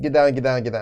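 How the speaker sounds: ordinary talk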